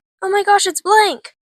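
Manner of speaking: thrilled, high, loud excited exclaiming shout. Recounting a fan tour, the speaker re-enacts shouting at cosplayers: retelling an excited shout. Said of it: "I was just shouting".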